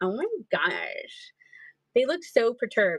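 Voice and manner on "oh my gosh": put-on valley girl impression voice. Voicing annoyed figurines, Kardashians voice. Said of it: "the girls talk like the Kardashians".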